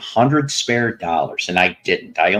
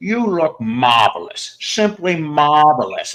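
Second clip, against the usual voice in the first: slow, pitched-up, drawn-out schmoozing; 6 semitones higher than usual. Complimenting another speaker's look, Billy Crystal Fernando impression. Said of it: "let me see if I can do my impression today".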